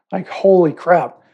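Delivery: ordinary delivery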